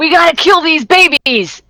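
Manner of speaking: high-pitched, shouted call-out. Narrating a game, voicing someone the players hear, yelling. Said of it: "you hear someone yelling out".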